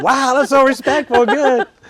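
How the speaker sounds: very high, loud, amazed gushing voice.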